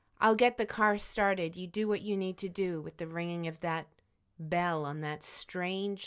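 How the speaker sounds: ordinary talk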